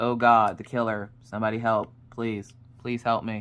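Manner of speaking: flat, low, deadpan, unexcited monotone drone. Describing a kid who never gets excited, imitating Orion's monotone. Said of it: "Orion's a very monotone kid".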